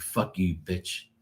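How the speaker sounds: mock pissed-off, angry cursing outburst. Retelling cursing at the dog after cleaning up its pee: imitating own angry outburst. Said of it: "I was so pissed".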